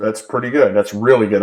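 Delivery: sarcastic, tongue-in-cheek tone. Reviewing a trade's reward against its risk: sarcastic. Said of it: "I'm being sarcastic".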